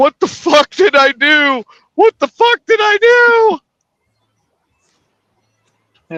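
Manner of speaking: put-on very high, slow, weepy blubbering sobs. Retelling a movie scene of a buyer crying in the shower: imitating a crying man. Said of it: "crying, going".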